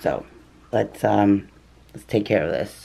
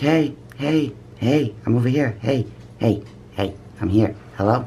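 put-on voice of a bird calling out; 4 semitones higher than usual. Voicing pet birds calling to the other birds: voicing a bird calling out. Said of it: "It's more like calling the other birds".

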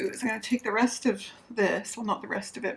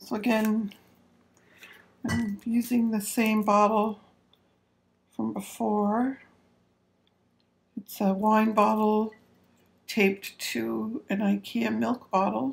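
tired, weary voice. Speaker describes his bottle build in a video, tired. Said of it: "Sorry about my voice. I'm just really tired".

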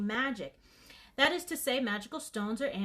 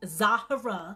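loud, most exaggerated possible Yankee accent; 6 dB louder than usual. Reading out a village name in a story: exaggerated Yankee accent on Zahara. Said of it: "I'm going to say it in the most Yankee voice that I can".

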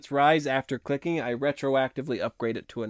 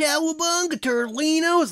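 put-on hoarse surfer voice, much higher, louder; 14 semitones higher, 5 dB louder than usual. Showing a surfer voice while explaining the throat is already worn out, hoarse surfer voice. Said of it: "to get like a surfer voice".

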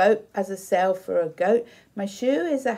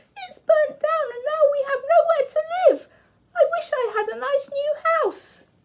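very high, squeaking mother mouse voice. Reading a story aloud, the mother mouse speaks: squeaky mouse voice. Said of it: "squeaked the mother mouse".

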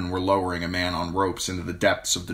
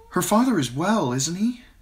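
anxious, worried, much higher pitch; 11 semitones higher than usual. Narrator reads Sansa asking about her father: anxious. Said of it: "Sansa said anxiously".

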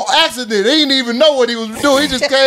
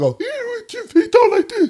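put-on light man's voice, much higher pitch; 11 semitones higher, 3 dB quieter than usual. Describing a man's two different voices, imitating his light voice. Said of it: "he got a real heavy, light voice".

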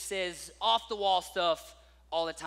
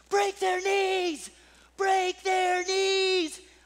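excited, shrill, drawn-out, very high yell; 12 semitones higher, 7 dB louder than usual. Retelling a man on the sideline during a game, imitating someone yelling. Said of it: "throws his head back, eyes closed, and yells".

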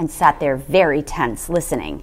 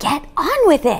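hissed out sharply; 11 semitones higher, 5 dB quieter than usual. The mother urges the father, who hasn't moved: hissed. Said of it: "hissed the mother".

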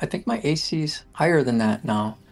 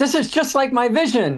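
very high-pitched shouted character cry; 10 semitones higher, 4 dB louder than usual. Voicing a character heading into the wall: character shouting. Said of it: "he shouts".

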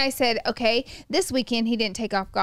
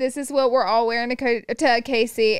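ordinary delivery

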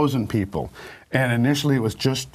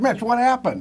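put-on high-pitched Italian accent; 12 semitones higher than usual. Mitch retells Bob's phone call: imitating Bob's Italian accent. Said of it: "He's Italian, so he talks like that".

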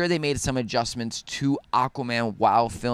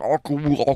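put-on underwater voice, higher pitched; 3 semitones higher, 3 dB louder than usual. Introducing the movie being discussed: underwater voice. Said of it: "That is my that's my underwater voice".

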